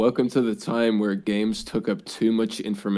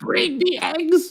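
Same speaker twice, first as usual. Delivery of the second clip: very high, badly done cartoon voice; 4 dB louder than usual. Quoting a line about eggs, bad Marge impression. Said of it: "that was a shit Marge impression".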